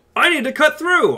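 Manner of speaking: very loud, high projecting voice. Showing how a deep voice must cut through: speaking loudly to cut through. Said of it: "I sound really weird right now 'cause I'm being all loud".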